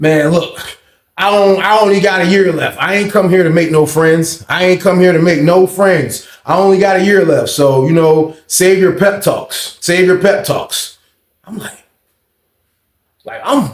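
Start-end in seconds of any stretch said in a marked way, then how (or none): none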